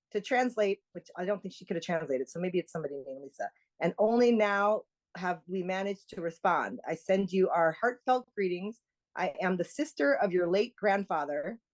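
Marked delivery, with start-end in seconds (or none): none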